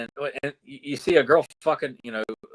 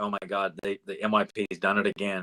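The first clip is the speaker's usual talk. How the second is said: mock miserable voice, lower; 5 semitones lower, 3 dB quieter than usual. Recalling watching cartoons as a kid, imitating own miserable past self. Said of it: "I'm sitting in misery".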